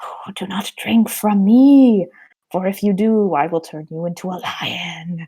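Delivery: whispered voice. Retelling a fairy tale, voicing a stream that warns the girl: whispering as the stream. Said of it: "the stream whispers to the girl".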